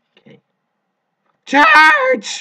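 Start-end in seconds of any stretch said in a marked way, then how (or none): 1.4-2.4 shrill, very high, loud shout that cracks. Planning a move, then charging ahead, voice cracking. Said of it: "My voice cracked there".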